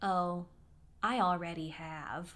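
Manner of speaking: mock, slow, creepy, suggestive delivery. Retelling what a much older man replied to being wished a good day: imitating a creepy tone. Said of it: "Like in in that tone. It was so creepy".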